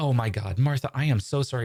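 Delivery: stock put-on lady voice. Reading a story aloud, voicing a woman character in a put-on female voice. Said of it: "I only have one female voice".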